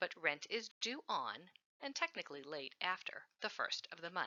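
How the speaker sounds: stress on on, held out with pause after. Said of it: "I stress the word "on"".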